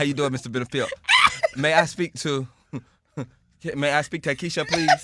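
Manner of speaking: jittery, nervous voice tripping over words. Acting out calling a girl and her father answering: acting anxious on the phone. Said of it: "the anxiety of having to call a girl".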